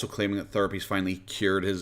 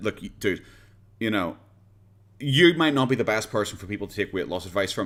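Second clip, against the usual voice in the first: plain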